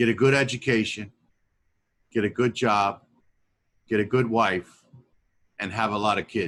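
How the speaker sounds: put-on broken English, Italian accent. Retelling the advice his grandfather gave from his rocking chair; grandfather's broken Italian-accented English. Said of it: "it was kind of like broken English, some Italian".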